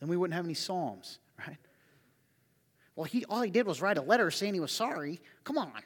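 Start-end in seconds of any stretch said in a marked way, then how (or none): 3.0-5.7 silly, ridiculing, mocking put-on voice. Imitating church people who would throw King David out: mocking put-on voice. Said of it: "Why do I do that voice?".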